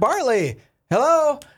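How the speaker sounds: mock very high, loud yell, calling out. Retelling calling out to a friend across a store: imitating own yell across a store. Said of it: "And I yell over there".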